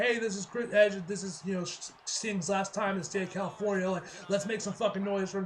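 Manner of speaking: ordinary talk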